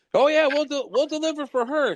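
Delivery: mock top-of-lungs shout. Retelling how someone in the dealership background shouts, retelling a top-of-lungs shout. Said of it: "shouts on top of his lungs".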